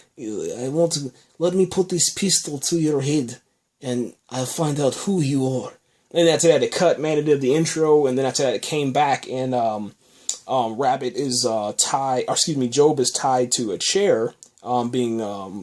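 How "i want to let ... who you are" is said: put-on, attempted Russian accent. Retelling a show scene where a man holds a gun to someone's head; attempted Russian accent. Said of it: "that's my attempt at a uh, Russian accent".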